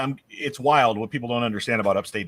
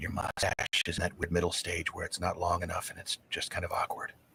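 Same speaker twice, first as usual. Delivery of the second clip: whispered, much quieter; 4 semitones lower, 10 dB quieter than usual. Retelling what his wife whispered in his ear, whispering. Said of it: "she whispers in my ear".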